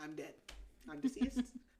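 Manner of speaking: ordinary delivery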